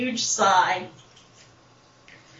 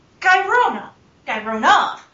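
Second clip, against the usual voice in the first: plain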